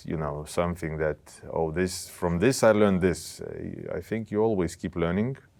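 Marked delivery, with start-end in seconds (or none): none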